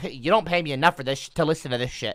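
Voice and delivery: put-on complaining, griping smart-speaker voice. Joking about what the Google Home would say: imitating Google Home complaining. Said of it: "she'll start bitching at me".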